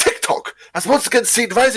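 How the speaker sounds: very high, posh, upper-crust newscaster voice. Showing a friend what was intended, doing a posh BBC newscaster voice. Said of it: "a very BBC, like, posh, like, newscaster being like".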